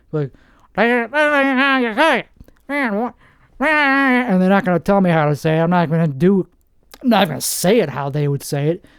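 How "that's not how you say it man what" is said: put-on pitched-up Texan local accent. Mocking how a local Texan would correct the speaker's pronunciation: imitating a Joe Exotic type guy. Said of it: "Some Joe Exotic type guy".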